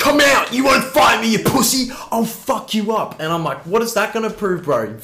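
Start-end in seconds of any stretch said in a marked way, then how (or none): 0.0-3.2 furious, high-pitched, tough-guy angry shouting. Recalling a man challenging two teenagers to fight; imitating him yelling. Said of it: "he was just yelling at me going".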